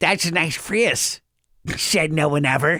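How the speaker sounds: put-on slow, drawn-out little-kid voice. Retelling what a child used to say when very little: imitating Gavin doing a voice. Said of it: "he would say it like this".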